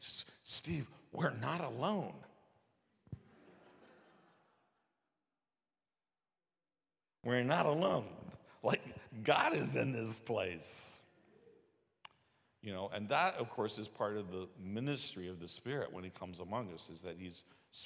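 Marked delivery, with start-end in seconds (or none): 0.4-11.0 bursting with excitement, raised, drawn-out voice. Retelling a church member's phone call about his dreams: imitating an excited church member. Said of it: "he was all excited".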